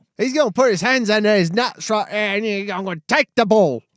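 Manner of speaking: very high, loud put-on Australian accent. Mimicking an Australian broadcaster explaining a football play: Aussie accent.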